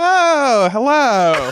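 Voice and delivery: very high, loud, camp voice.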